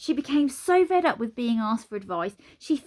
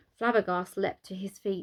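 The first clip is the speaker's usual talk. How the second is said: ordinary delivery, nothing marked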